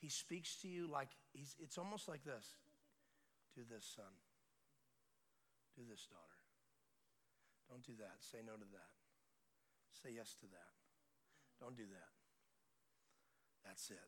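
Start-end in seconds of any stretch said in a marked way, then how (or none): 3.6-12.1 still, small, very quiet, breathy voice. Describing how he speaks to you, acting out his still, small voice. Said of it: "he's a still, small voice".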